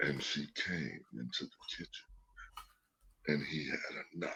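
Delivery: very hushed, deep, dark dramatic narrator whisper. Explaining what they can't fall asleep to, mimicking a deep-voiced narrator. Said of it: "some deep voice narrator".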